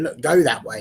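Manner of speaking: ordinary talk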